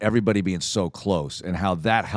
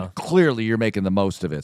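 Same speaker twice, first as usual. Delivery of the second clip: normal talking voice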